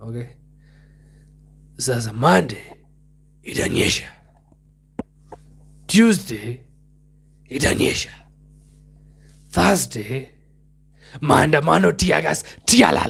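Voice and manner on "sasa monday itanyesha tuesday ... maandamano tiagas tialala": TV weatherman forecast-style delivery. Doing an impression of Raila Odinga as a weatherman: Raila Odinga as a weatherman. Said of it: "this is my impression of Raila Odinga as a weatherman".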